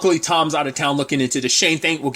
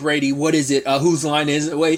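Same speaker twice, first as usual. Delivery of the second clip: normal talking voice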